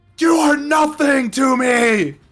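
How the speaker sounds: piercing, shrill scream, very high and very loud. Game master voicing the creature's other face screaming at a player, screaming. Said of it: "the other side of the face just screams at you".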